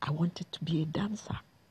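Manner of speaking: in a whisper. Speaker drops into a whisper partway through a story, whispering. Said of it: "maybe I'll say this in a whisper".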